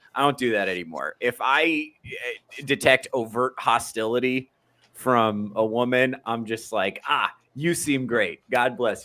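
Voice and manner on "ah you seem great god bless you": mock cheerful, smiling, dismissive brush-off tone. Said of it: "Big smile on my face".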